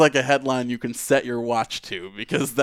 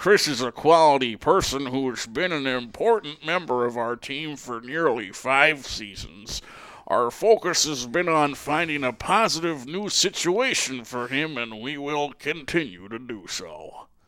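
put-on grizzled old prospector voice. Reading a press release aloud: grizzled old prospector voice. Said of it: "You kinda sound like a grizzled old prospector".

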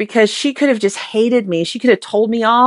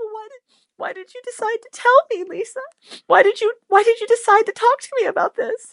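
put-on small tearful voice, much higher; 11 semitones higher than usual. Retelling the listener's question to her, imitating a tearful little Jeannie voice. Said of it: "with this little Jeannie voice and tears in her eyes".

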